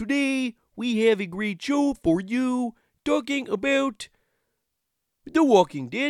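very high, loud cartoon frog-puppet host voice. A co-host introduces Journey into Comics: Kermit the Frog voice. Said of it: "Kermit the Frog here".

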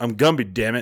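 put-on surly voice. Recalling someone who wore the outfit and played Gumby, in a surly Gumby impression. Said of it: "he'd be like".

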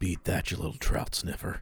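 hushed, whispered mutter under the breath. Retelling the Home Alone 2 scene where Buzz speaks into Kevin's ear: Buzz muttering under his breath. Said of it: "under his breath into Kevin's ear says".

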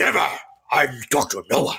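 really deep, very stern, dead-serious voice. Retelling how a man on camera answered whether he talked to anybody, really deep voice. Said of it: "goes into that really deep voice and goes".

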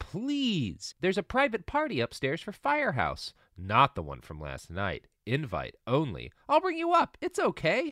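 very earnest, sincere, swooping. Retelling what Sam said while inviting them upstairs: retelling an earnest plea. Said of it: "he says very earnestly".

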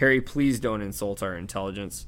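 ordinary delivery

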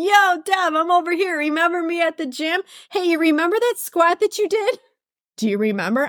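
barked, high-pitched voice. Voicing a sore right hip that grips and barks at her: barking voice of a sore hip. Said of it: "just gripping and barking at me, going".

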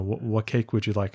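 ordinary talk

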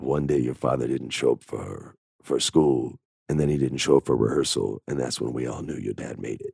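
great low voice, dropped very low and soft. Speaker retells David Keith telling him a story about his father: David Keith's great low voice. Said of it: "he has that great low voice".

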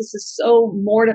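put-on sobbing voice. Retelling what she said when she called on the phone, imitating someone sobbing. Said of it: "she called me sobbing on the phone".

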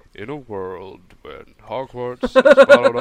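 solemn, loud, swooping movie-trailer narrator voice. Describing american movie trailers, the speaker demonstrates a deep movie-trailer voice. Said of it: "the voice who's all deep".

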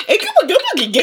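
put-on very high-pitched baby-talk voice.

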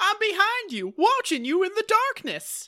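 very high-pitched, loud cartoon voice. Voicing a character for the group, in a Goofy-like cartoon voice. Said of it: "Y'all just kind of sound like Goofy".

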